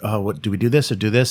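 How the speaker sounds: ordinary delivery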